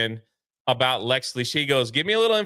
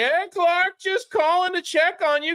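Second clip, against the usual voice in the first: acted very high screaming screech. Describing a scene, the speaker voices the mom calling Clark, imitating her screaming into speakerphone. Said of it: "she's screaming into the speakerphone".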